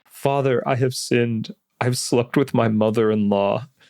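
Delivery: put-on crying, male voice. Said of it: "And then he's, like, crying".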